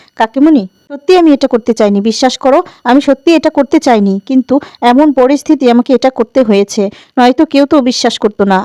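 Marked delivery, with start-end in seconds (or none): none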